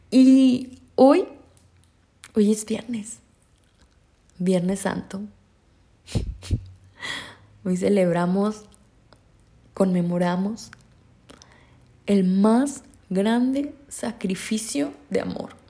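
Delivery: emotional, cracking, choked-up voice. Addressing listeners on Good Friday, voice breaking with emotion. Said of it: "se me quiebra un poquito la voz".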